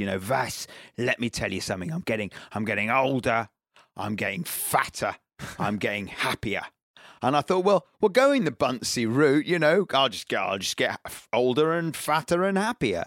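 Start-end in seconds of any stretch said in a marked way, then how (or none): 0.0-6.6 put-on barking voice with a North London accent. Recalling a drive with commentator Steve Bunce, the speaker does his North London bark. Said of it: "in his kind of North London bark of a voice".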